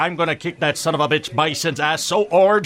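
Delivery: put-on thick Belgian accent with tough talk. Pitching a Guile movie, speaker voices Guile's fighting words in a Jean-Claude Van Damme accent. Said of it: "what was that accent you did?".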